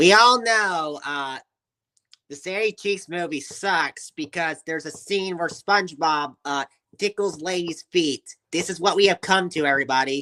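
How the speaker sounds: put-on high cartoon squid character voice. Asked to do cartoon character voices, the speaker tries a Squidward voice. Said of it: "Can you do the voice of Squidward".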